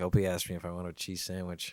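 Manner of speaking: plain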